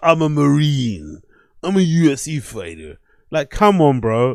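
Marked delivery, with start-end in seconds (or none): 0.0-3.0 very slow, derisive, mocking put-on caricature voice. Mocking how Brendan tells his story about a road confrontation: mocking impression of Brendan. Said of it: "In that fucking, uh, what's his fucking name voice".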